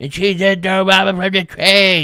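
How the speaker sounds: put-on very loud, strained, high old-lady voice. Discussing Goonies references, the speaker mimics the bad guys' old lady: imitating the Goonies old lady. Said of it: "I just killed my voice doing that impression".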